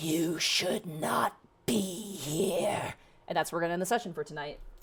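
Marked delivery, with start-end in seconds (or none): 0.0-2.9 very slow, drawn-out, unnatural guttural creature voice. Voicing lizard-like creatures speaking in unison: guttural creature voice. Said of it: "in a guttural tongue".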